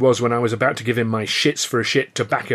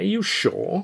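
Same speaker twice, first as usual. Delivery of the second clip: sly, cunning, very high-pitched voice; 9 semitones higher, 4 dB quieter than usual. Chaplin responds to the narrator's claim; sly. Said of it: "He said slyly".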